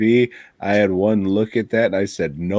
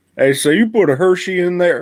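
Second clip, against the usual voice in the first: Texas accent, pitched very high; 9 semitones higher, 4 dB louder than usual. Imagining visitors being served chili in Texas, a speaker mimics them in a Texas accent. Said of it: "that's more of a Texas accent".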